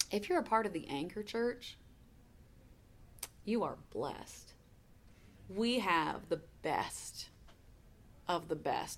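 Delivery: on the verge of crying. Speaker addresses the anchor church congregation, emotional and near tears. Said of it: "I know I'm getting emotional and maybe even ready to cry".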